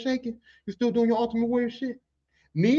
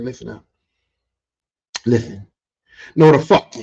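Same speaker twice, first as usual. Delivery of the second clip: put-on booming, very loud, dead-serious, no-nonsense voice; 10 semitones lower, 10 dB louder than usual. Retelling stopping the machine and warning a coworker: imitating a serious warning. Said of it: "he knew I was serious".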